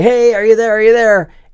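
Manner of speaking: high, loud calling-out voice.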